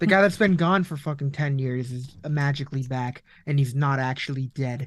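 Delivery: ordinary delivery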